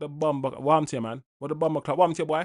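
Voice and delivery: put-on soft Jamaican accent. Praising switching between accents, doing Eubank Junior's Jamaican patois. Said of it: "back into our patois".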